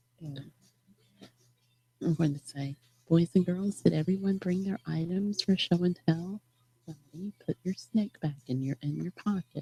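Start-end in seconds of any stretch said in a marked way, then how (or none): 3.1-9.6 soft half-whisper under the breath. Previewing a planned line so someone won't hear it: half-whispering. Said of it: "I whispered it".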